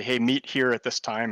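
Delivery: ordinary delivery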